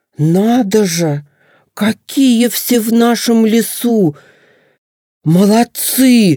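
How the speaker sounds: loud exclamation. A young moose speaks up among the forest animals; said loudly. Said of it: "громко произнес лосенок".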